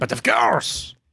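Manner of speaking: line given a French accent. Podcasters discussing a show's characters, one does a Lumiere impression. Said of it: "That's a great Lumiere".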